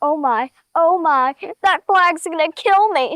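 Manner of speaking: mock frantic, panicking, freaking-out voice. Voicing a horse that is scared of a big flag: voicing Tucker freaking out. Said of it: "he was just freaking out".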